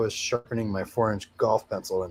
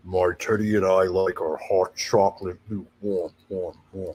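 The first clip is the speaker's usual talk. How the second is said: darkest, most sinister, menacing voice; 3 semitones lower than usual. Asked by the other speaker to read a chat statement in their most sinister voice. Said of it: "use your most sinister voice to read the statement".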